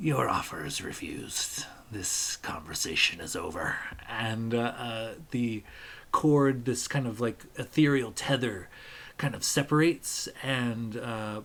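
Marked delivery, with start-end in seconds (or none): 0.0-3.7 pirate voice with a possessed-sounding delivery. Voicing a spirit refusing an offer through a pirate: speaking through a pirate's voice. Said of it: "through the pirate's voice, he says".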